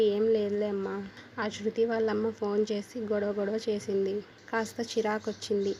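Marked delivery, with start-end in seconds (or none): none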